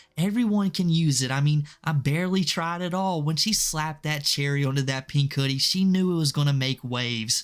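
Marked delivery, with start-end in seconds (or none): 0.1-3.2 full of passion, heartfelt delivery. Mocking a lolcow's t-shirt launch: passionate Tofiichu impression. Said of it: "Can't you hear the passion in her voice".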